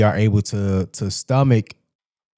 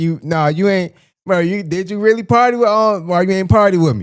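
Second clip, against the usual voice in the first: put-on hesitant voice, pitched higher; 9 semitones higher than usual. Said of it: "when Fab said".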